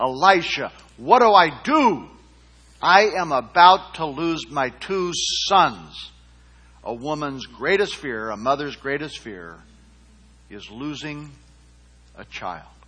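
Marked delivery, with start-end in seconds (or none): 0.0-6.1 slow, desperate, pleading tone. Speaker retells what a woman said to the man of god, imitating a desperate plea. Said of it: "you can hear the desperation in her voice".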